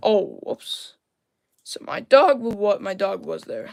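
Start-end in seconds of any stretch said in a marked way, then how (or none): 1.6-3.7 voice cracking and breaking partway through. Mid-commentary, talking about their dog, with a voice crack. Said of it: "Now it's just a voice crack".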